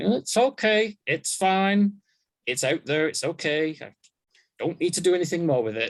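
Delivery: high-pitched words squeezed out through clenched teeth. Author recalling rereading an old book of theirs, retelling talking through gritted teeth. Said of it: "reading it kind of with gritted teeth, going".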